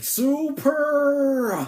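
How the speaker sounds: belted out loudly, held long and high. Comparing an attack to Frankie's catchphrase: Frankie voice. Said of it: "reminds me of Frankie from One Piece".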